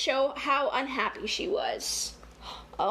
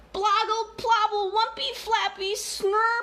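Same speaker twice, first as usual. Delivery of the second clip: put-on high, upset baby babble like a toddler; 8 semitones higher, 3 dB louder than usual. Reading a picture book aloud, trying Trixie's baby babble. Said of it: "I'm going to try".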